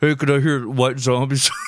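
faked, put-on disguised voice. Retelling calling a radio station as a kid: imitating own put-on deep voice. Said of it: "I would use a deep voice and be like".

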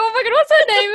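high, loud flustered panic. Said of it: "I was like".

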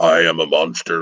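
put-on deep monster voice. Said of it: "with his deep".

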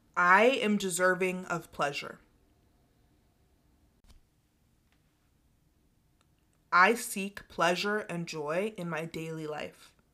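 slow, unhurried speech with pauses between words. Leading listeners through affirmations for them to repeat, slow, with pauses. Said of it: "I'm gonna speak them slowly and give a pause".

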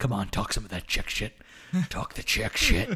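insistent, aggressive, pushy whisper, all breath. Retelling a movie scene where the boss urges an employee: imitating an aggressive whisper. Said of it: "whispers into".

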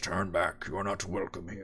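deep gravelly voice. Game master voicing a Goliath at the gate warning the party, deep gravelly voice. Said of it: "in a deep and gravelly voice".

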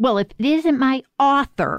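high Western twang. Retelling what Justice O'Connor would say on meeting the author: Western twang. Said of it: "in that great Western twangy voice".

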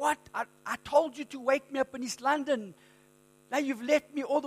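enraged, furious shout. Telling a joke about a passenger who woke up in Cape Town: imitating a furious shout. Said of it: "and he's furious".

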